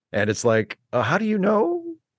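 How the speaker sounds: plain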